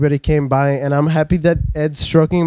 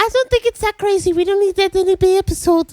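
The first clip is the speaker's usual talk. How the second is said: very high-pitched put-on voice. Finishing a friend's sentence for him: imitating Julian. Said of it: "That was a pretty good Julian impression".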